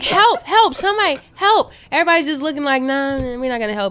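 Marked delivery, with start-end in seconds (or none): 0.0-1.7 loud, high-pitched yelling cries. Recounting being chased through the subway, reenacting yelling for help. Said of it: "I yelled for help".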